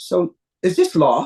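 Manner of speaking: put-on thick, slow London accent, laid on heavy. Retelling a phone call from Ray: heavy London accent as Ray. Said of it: "has a very heavy London accent".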